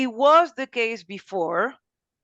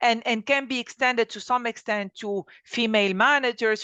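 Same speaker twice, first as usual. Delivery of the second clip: ordinary talk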